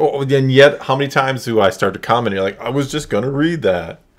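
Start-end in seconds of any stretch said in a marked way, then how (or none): 2.6-3.9 dazed, spaced-out stoner surfer-dude voice. Mimicking the other person's reply, in a stoned-out surfer voice. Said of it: "a stoned out surfer voice".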